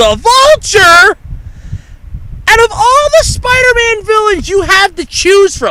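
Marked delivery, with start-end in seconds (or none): 0.0-1.2 high, loud, top-of-the-lungs shriek. Recounting screaming while driving with the window open, retelling a top-of-lungs scream. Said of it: "I scream at the top of my lungs".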